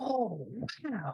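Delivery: very soft, hushed, very high little voice. The game master voices someone heard from the cavern entrance, in a soft voice. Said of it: "then you hear a soft voice".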